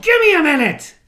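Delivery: frantic, very high, very loud, shrill yell. Retelling telling another speaker to wait: imitating someone yelling. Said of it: "I yelled".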